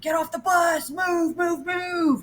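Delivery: mock, very high, screaming sergeant voice. Telling what happened when the bus reached the stop: retelling a scream. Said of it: "he starts screaming".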